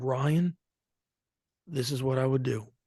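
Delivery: put-on flat, level monotone with pauses. Retelling how Dwayne answered a question, imitating Dwayne's monotone. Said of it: "this monotone voice, and he pauses".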